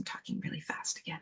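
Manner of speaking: fast, soft whispered aside.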